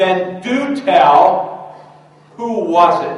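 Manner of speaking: stern, high, loud, slow demanding voice.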